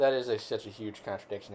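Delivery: ordinary delivery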